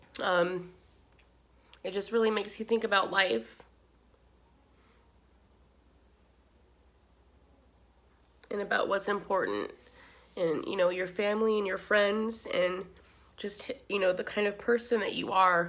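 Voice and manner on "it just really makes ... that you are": tearful crying voice, talking through tears. Talking about what the job has shown you, crying. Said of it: "Oh my God, I'm crying".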